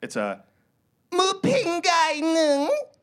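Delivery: Thai-accented speech. Telling listeners about a thai word from a trip, in a thai accent. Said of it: "before I did the accent".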